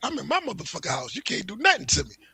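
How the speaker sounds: agitated, defiant, worked-up, spazzing-out outburst. Retelling a video of a man shouting at police in his house: imitating a man freaking out. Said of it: "the dude is spazzing out".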